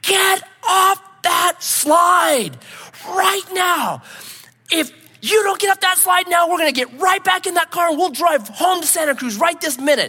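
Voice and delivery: very high, all-out, shrill screech, drawn out. Speaker retells a woman at a crowded park, imitating her screaming at the top of her lungs. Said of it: "She starts screaming at the top of her lungs".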